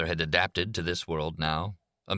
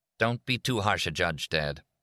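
usual speaking voice

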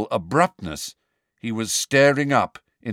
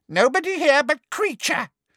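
very high, delighted, gleeful elf voice. The elf answers Harry, then turns away toward the door, gleeful. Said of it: "said the elf gleefully".

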